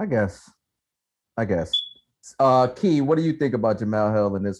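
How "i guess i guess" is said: beaten, defeated and resigned tone. Answering another speaker's point, sounding defeated. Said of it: "you sound defeated".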